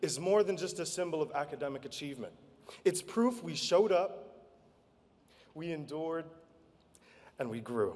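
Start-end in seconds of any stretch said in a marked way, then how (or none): 2.8-8.0 choked-up, emotional voice catching. A graduating student giving a speech to classmates, choking up. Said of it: "I'm choking up here".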